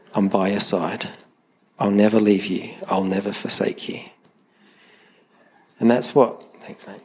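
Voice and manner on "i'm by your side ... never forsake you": put-on whisper. Acting out the cave scene beside Elijah: whispering as God. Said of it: "can hear the whisper saying".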